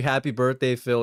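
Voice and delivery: ordinary delivery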